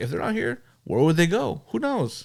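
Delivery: mocking, swooping sing-song. Mocking a husband's words about his missing family: mocking imitation of the husband. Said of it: "And he's like".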